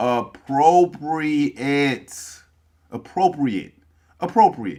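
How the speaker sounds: "appropriate" drawn out, slow, deliberate. Showing how to say a word after correcting its use: said slowly. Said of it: "Say it with me slow".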